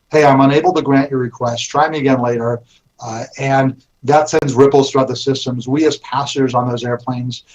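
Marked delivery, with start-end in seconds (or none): none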